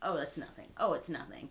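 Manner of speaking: ordinary delivery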